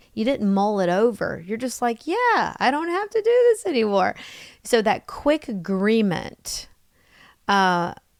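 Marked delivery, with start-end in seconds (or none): 2.0-4.1 put-on very high-pitched childlike voice. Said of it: "I like how you said it so childlike".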